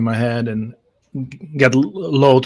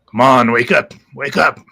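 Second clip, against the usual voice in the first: twitchy, jittery, insect-like bug voice; 4 dB louder than usual. Playing a character shaking an unconscious man to wake him, jittery bug voice. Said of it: "with my my jittery bug voice".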